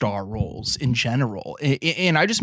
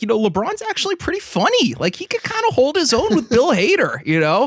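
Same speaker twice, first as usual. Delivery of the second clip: very high-pitched, swooping, insincere, fibbing-sounding voice; 12 semitones higher, 4 dB louder than usual. Acting out film critics who were lying when Trainwreck came out, imitating critics' slightly higher lying voice. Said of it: "their voice would get a little higher".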